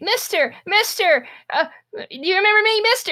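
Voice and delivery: put-on very high, pleading, tiny child's voice.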